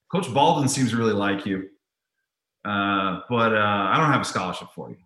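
plain

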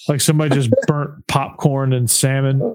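ordinary talk

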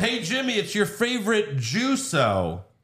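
slow, stretched-out, swooping high-pitched yell. Retelling a show scene, looking at the camera: imitating Paul Heyman yelling. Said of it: "But he yells".

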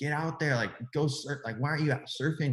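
high, mock nagging, bickering holler. Retelling how they yell at their dad to go surf: imitating own yelling. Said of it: "bickering and yelling at him".

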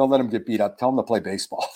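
soft, half-whispered stage whisper. Retelling what he later told a player's mom: retelling own half-whisper. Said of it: "I whispered to Mom afterwards".

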